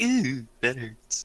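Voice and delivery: very high, tickled little giggle. Playing with a new joy buzzer in character: giggling to self. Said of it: "giggling to myself, going like".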